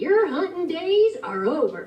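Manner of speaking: cowboy character voice.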